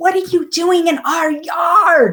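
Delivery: mock yell, very high, demanding. Retelling yelling at a half-naked man in the backyard: retelling a yell. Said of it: "I remember yelling at him".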